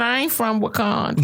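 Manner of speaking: ordinary talk, nothing marked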